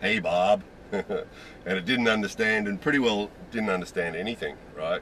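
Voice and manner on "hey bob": put-on trying out an American accent. Retelling trying again after it didn't understand, now in an american accent. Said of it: "I tried an American accent".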